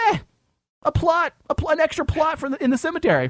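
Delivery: mock gullible, dopey voice, very high pitched. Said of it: "see a commercial or an advertisement and think".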